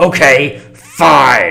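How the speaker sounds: angry outburst, very loud and rough. Showing how a game line should be said to provoke: saying it angrily. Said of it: "you gotta say it angrily".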